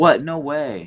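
fake, sarcastic amazement, high and loud. Reacting to another speaker's fact, put-on sarcastic surprise. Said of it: "That sounded a little sarcastic".

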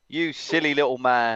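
put-on play-acted, toned-down old man's heckling shout. Retelling what a man behind kept shouting: imitating someone shouting. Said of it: "who just kept shouting".

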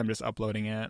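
ordinary talk

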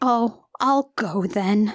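very slow, very drawn-out, dejected sad voice. Retelling a movie scene where a rebuffed character leaves: imitating a sad rebuffed line. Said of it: "Grace feels rebuffed and is sad".

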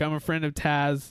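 plain

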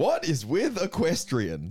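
slow, swooping stand-up comedian delivery. Reading a stand-up bit from phone notes to friends: stand-up comedy intonation. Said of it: "in the intonation of a stand-up comedy".

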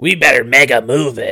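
loud, smoky cartoon smoker voice. Describing Mega Man from the Captain N cartoon, the host imitates him: Mega Man smoker voice. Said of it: "He sounded like he was a smoker".

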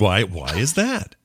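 stretched out slowly, spoken through the nose. Continuing the Tucker Carlson impression after praise: Tucker Carlson impression. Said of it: "that's a good Tucker Carlson".

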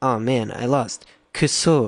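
frat bro voice with tacked-on Japanese words. Acting out a fraternity friend losing at ping pong, doing an impression of him. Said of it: "my best guy in Phi who just learned three Japanese words impression".

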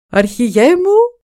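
high, very loud joyful shout at full volume. The wizard calls out to his chief: joyful shout. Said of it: "φώναξε όλο χαρά ο μάγος".

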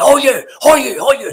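very high-pitched, loud, slow, drawn-out repeated shouting. Retelling how a teammate shouted at him on the park: imitating Tam Burns shouting. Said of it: "he's shouting at you".

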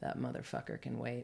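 low, soft, gruff voice.

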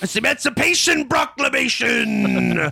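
very high, rough, creaky, slow drawn-out drawl. Joking about what people expected from the Lincoln role: Daniel Day-Lewis There Will Be Blood voice. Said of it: "people were expecting him to just be like".

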